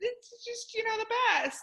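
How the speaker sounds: teary voice, on the verge of crying.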